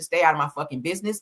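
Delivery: plain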